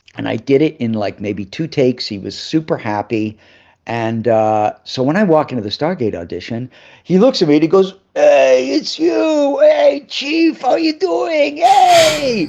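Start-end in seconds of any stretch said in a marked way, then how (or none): 8.2-12.5 put-on Maltese accent, high and slow, "hey" stretched out. Retelling how a man greeted him at the Stargate audition, Maltese accent. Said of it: "That Maltese accent".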